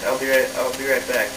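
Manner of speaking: ordinary talk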